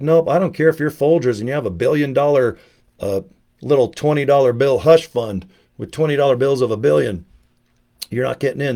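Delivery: plain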